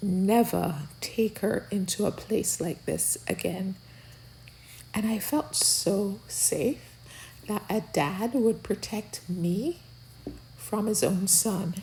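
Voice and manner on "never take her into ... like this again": normal talking voice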